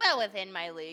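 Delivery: little voice. Answering the other Red Cap in character: little voice. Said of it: "You just hear a little voice".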